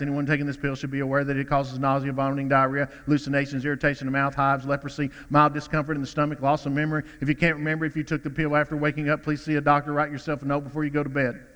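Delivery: low, breakneck, rapid-fire delivery. Mimicking a sleeping pill ad reading out its side effects, very fast. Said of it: "And they read them so fast".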